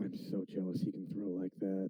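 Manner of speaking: low, hushed but carrying stage whisper. In a role-play game, whispering so the others hear but not their master; loud whisper. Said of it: "I'm gonna whisper it loud enough".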